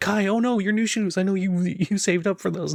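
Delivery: very high, sweet, doting, cute chibi voice. Voicing a character fussing over a friend's new shoes: cute chibi voice. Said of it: "goes very, very, like, cute and chibi".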